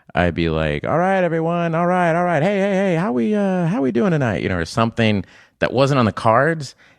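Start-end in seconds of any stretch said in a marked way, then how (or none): 0.8-4.4 very high, showy game show host patter and hype. Retelling how an opening sketch line was ad-libbed: game show host voice. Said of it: "as a game show host".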